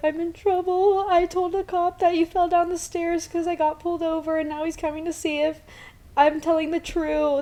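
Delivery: high, put-on crying voice, all teary. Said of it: "totally sounded like I had been crying".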